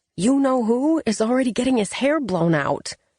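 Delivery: theatrical whisper. A narrator reads a character urging someone to hurry, in a stage whisper. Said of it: "Katrine's voice dropped to a stage whisper".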